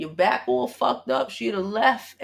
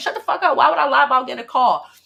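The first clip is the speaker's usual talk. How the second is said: loud screamed outburst; 4 semitones higher, 7 dB louder than usual. Retelling being harassed on the phone: retelling screaming at someone. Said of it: "I had to start screaming at him".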